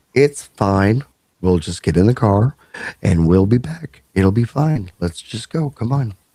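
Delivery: calm, reassuring tone. Retelling how the other speaker's dad reassured everyone: imitating someone speaking calmly. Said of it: "hear your dad speak that calmly".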